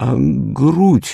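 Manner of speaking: very high, quivering, trembling-lipped. Narrator reading a man eagerly questioning the schoolboy, asking with trembling lips. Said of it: "дрожащими губами осведомился".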